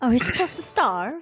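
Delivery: abrupt British-sounding delivery. Asking the game master a question, slipping into a british accent. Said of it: "Why did you sound British?".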